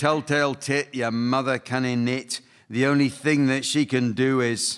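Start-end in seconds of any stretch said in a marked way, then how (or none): none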